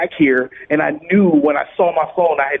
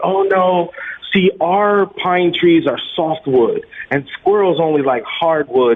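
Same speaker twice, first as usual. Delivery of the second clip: plain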